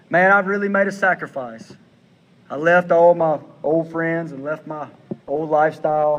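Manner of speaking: very sad, sorrowful, downcast, mournful tone. The speaker shows an example of what not to say; said in a very sad way. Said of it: "imagine in a very sad way".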